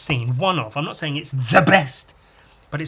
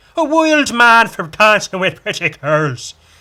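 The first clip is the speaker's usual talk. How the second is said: homemade put-on Irish accent, raised pitch; 6 semitones higher, 7 dB louder than usual. Telling a story about a character, put-on Irish accent. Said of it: "that's my Irish accent".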